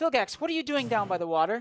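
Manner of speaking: very high, loud motherly yell. Voicing a mother who yells out to a child by the water: mother yelling a call. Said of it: "yells out".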